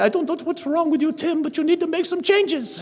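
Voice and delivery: put-on Austrian accent. Recalling what the school's Austrian secretary would say to him: Austrian school secretary impression. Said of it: "she would talk like this to you".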